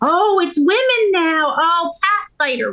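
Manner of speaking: shrill, very high, taunting, jeering yell. Recalling men who popped into the hall to heckle the women: imitating men yelling taunts. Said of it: "like yelling like they thought they belonged there".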